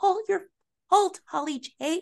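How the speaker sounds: very high voice, on the verge of tears. Retelling a show scene where Allie blames Holly J; imitating Allie, almost crying. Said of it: "She always sounds like she's about to cry".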